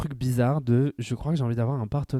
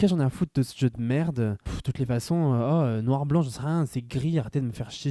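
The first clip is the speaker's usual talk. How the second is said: ordinary talk, nothing marked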